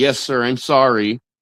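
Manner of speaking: slow, snide, put-on sarcastic tone. Retelling how a girlfriend answers a complaint: imitating a sarcastic reply. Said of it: "she always says something sarcastic like".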